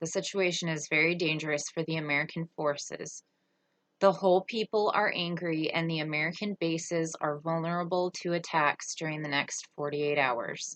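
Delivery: ordinary talk, nothing marked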